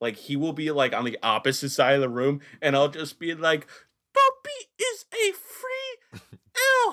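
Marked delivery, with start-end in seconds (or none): 4.1-6.9 very high, slow, squeaky elf voice. Speaker recounts the line they say across the room, Dobby voice. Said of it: "stop using that voice".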